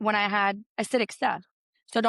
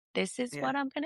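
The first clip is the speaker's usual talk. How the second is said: put-on robotic voice, higher and quieter; 3 semitones higher, 7 dB quieter than usual. Retelling how they answered on the phone: imitating own robotic voice. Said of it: "it's almost like a robot".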